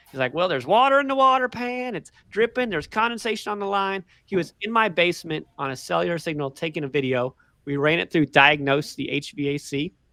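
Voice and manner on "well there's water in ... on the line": put-on heavy rural Southern country accent, pitched up. Retelling what a man said while filming in the basement, thick Southern country accent. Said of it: "a really thick Southern country accent".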